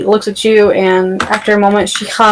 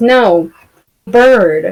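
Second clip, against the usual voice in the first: speaking while suppressing a laugh. Voicing a man who shakes his head: suppressing a laugh. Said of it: "trying to suppress the chuckle".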